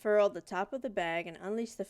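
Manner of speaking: plain reading voice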